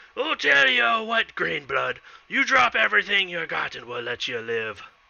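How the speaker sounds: threatening bandit character voice. A storyteller voices a bandit confronting the listener's character: bandit character voice. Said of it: "he kind of points his scimitar at you, and he's like".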